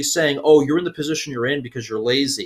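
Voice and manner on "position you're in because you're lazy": normal talking voice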